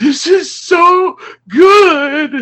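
very high, loud, drawn-out sobbing wail. Retelling Rachel's reaction while watching together, imitating Rachel bawling. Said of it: "she's like crying, like bawling".

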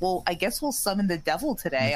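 ordinary talk, nothing marked

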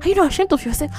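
very high-pitched, outraged scolding voice. Retelling walking in on a boy in a dark room, mock scolding like a betrayed wife. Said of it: "I was talking like a one woman that caught her husband cheating".

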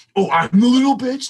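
high, loud mocking voice.

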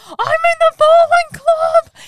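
shrill, very loud, high, drawn-out scream. Retelling how a character shouts about joining the club: imitating someone screaming. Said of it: "He's literally screaming".

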